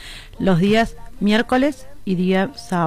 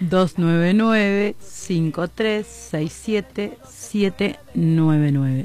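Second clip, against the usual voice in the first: slightly slower pace; 2 semitones lower than usual. Repeating the church's phone number for listeners, a little slower. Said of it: "Y ahora un poquito más despacio".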